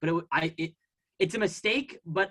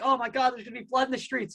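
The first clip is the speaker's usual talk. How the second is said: mock teary, high sobbing outburst; 6 semitones higher than usual. Retelling a TV appearance by Bill Ackman: imitating Bill Ackman crying.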